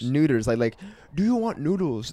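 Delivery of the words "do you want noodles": high, stock caricature put-on Chinese accent. Retelling a podcast bit, the speaker quotes it in a mock Chinese accent. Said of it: "They're just doing like Chinese voice".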